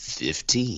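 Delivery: put-on announcer voice, big-build delivery. Joking about a longer book run, put-on announcer voice. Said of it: "That's my announcer voice".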